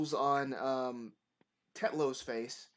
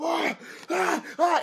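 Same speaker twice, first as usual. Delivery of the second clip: very high, loud, panicked screaming cries; 9 dB louder than usual. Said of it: "And he's screaming".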